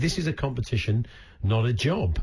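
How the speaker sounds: ordinary talk, nothing marked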